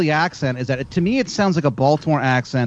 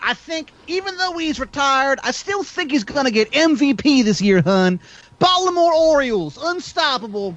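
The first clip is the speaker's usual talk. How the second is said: put-on Philadelphia accent, pitched very high; 10 semitones higher than usual. Joking with the others about the Orioles, in a put-on Philly-style accent. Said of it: "you're almost getting into like Philly boy, Philly boy Roy territory".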